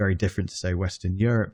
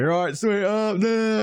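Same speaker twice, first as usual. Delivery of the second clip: put-on acted rowdy drunken shout, very high and drawn-out; 13 semitones higher than usual. Describing drunk British guys on holiday shows, imitating drunk British guys shouting. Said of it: "just shouting perpetually".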